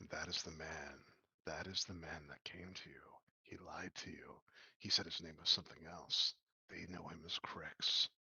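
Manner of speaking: low, hushed whisper close to the ear. Speaker acting out what someone whispers into a listener's ear; whispering in someone's ear. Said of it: "he whispers in your ear".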